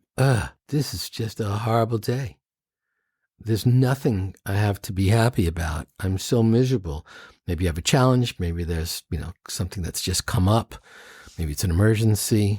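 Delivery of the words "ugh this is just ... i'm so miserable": usual speaking voice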